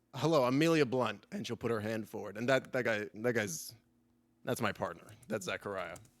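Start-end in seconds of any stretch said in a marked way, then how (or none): 0.1-1.2 elf character voice, raised. Voicing an elven woman introducing herself: Amelia Blunt voice. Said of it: "she'll roll her eyes and she'll go".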